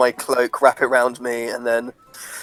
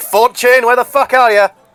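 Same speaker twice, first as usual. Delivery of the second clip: in-character dwarf bellow, much higher and louder; 11 semitones higher, 7 dB louder than usual. In a tabletop game, a dwarf searching for Fortune: in-character bellow. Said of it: "I just sort of just bellowed".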